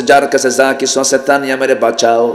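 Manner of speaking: ordinary delivery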